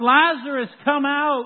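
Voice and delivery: powerful, authoritative yell. Retelling the raising of Lazarus, acting out Jesus's loud shout. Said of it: "Jesus shouts in a loud voice. He yells".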